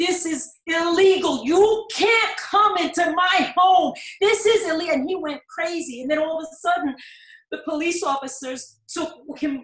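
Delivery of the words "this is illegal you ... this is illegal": mock screaming, loud, upset, beside himself. The speaker retells a husband shouting at police officers, retelling a scream. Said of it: "he was screaming and shouting".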